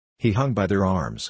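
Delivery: normal talking voice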